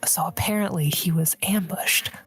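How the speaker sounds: hushed whisper. Whispering news into a phone, in character, to another character: whispering. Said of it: "I'm just whispering into the other phone".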